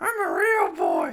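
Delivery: very loud, very slow, high, creaky voice. Doing an impression of Pinocchio from Shrek: Pinocchio from Shrek impression. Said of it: "trying to do an impression of Pinocchio from Shrek".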